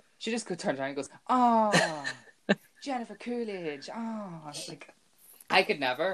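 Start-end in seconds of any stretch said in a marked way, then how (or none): 1.3-4.5 very slow, clumsy, high, drawn-out put-on voice. Imitating a performer doing her Jennifer Coolidge: bad Jennifer Coolidge impersonation. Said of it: "That was a bad impersonation".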